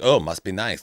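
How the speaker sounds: mock bitchy, catty tone. Retelling her kid imitating her before walking away, a mock-bitchy remark. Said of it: "walk away all bitchy".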